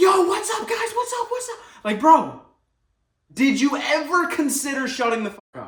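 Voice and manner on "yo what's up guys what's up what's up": pumped-up energy with pitch raised way up. Telling listeners about the character you have been playing until now, do a super high energy YouTuber voice. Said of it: "I've been playing that super high energy YouTuber guy like".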